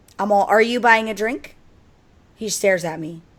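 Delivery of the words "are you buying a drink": play-acted loud, scolding dressing-down. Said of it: "reading that kid the riot act".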